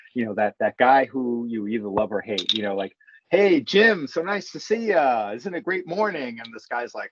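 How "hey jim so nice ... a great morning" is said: high, super-happy voice, all cheer. Retelling a TSA worker greeting everyone by name: imitating a super happy guy. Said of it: "there's this one super happy guy".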